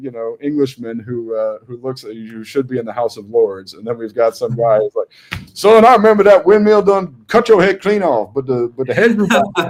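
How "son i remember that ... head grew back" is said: put-on very high, exaggerated Southern Alabama twang. Describing two contrasting voices, mock Deep South Alabama accent. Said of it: "From the deep South Alabama".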